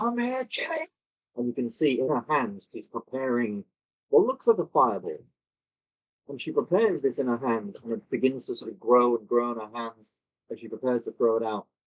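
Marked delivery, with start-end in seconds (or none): 0.0-0.9 furious, angry half-scream, a mild yell. Narrating a scene where she screams at Killian, screaming. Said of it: "she just sort of like screams".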